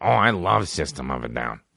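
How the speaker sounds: low, dropped, easygoing buddy voice. Describing a stoner friend, imitating how he talks. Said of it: "he talks like this".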